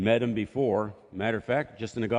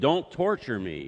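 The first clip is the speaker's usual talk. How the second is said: mock, pleading, begging demon-like voice. Retelling a possessed man's words to Jesus: imitating someone pleading. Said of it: "this guy is still pleading".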